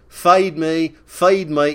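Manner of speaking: loud, very slow, drawn-out Australian accent. Acting out asking for food abroad: Paul Hicks Australian impersonation. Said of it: "in my best Paul Hicks Australian impersonation".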